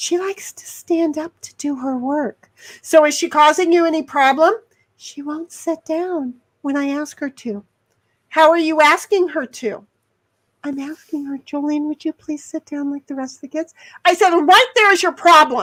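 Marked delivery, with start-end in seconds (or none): 11.4-13.7 mock-timid meek voice, quieter, faster. Advising a second grade teacher, the speaker acts out her request to jolene: mimicking a timid request. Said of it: "if you're going to use that kind of a voice".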